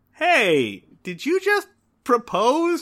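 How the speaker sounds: smug yet half-puzzled, sing-song teasing tone. Recapping a scene, acting out a character's reply, mock-smug. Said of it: "very smugly is just like".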